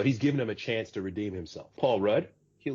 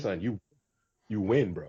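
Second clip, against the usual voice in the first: put-on uptown New York Latin accent. Imitating the named actor telling the other speaker he wins: John Leguizamo impression. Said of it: "he gives you that uptown New York, uh, Latin accent".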